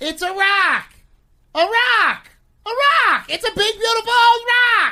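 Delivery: thrilled, escalating excitement.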